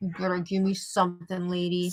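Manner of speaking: speaking in a dog voice. Voicing what the dog seems to think while looking at her: voicing the dog's thoughts. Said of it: "He's just looking at her like".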